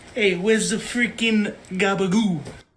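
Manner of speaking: put-on Brooklyn accent, in character. Doing the voice after being asked to just do Joey: Joey voice. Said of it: "just do Joey".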